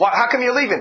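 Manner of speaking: ordinary talk, nothing marked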